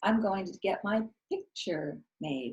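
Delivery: put-on, sugary, sweetest little-girl voice. Retelling own words to a man across a counter, in sweetest little girl voice. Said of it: "in my sweetest little girl voice".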